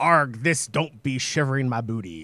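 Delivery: stagey put-on pirate voice. Recalling how the listener's words sounded in their head, pirate voice. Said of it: "in a pirate voice going".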